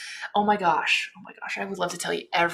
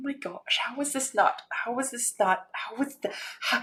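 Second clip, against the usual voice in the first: upset, exasperated sputter, breaking off and restarting; 5 semitones higher, 3 dB quieter than usual. Ranting about a copied character design, upset and exasperated. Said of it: "I'm upset".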